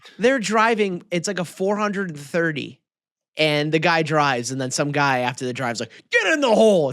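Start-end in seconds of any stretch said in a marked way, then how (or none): 6.1-6.9 high, heckling shout. Imitating a golf spectator who yells after a shot: imitating a fan yelling. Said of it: "there's always a guy that yells that".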